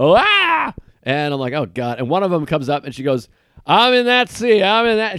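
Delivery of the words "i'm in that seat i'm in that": mock-drunk woman's voice, much higher. Speaker retelling a woman who came up to claim a seat, imitating a drunk woman. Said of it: "She's hammered".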